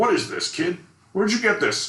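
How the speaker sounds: gruff, very high-pitched, grilling tone. Retelling what a producer said on seeing the comic: imitating a gruff man. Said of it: "he's very gruff".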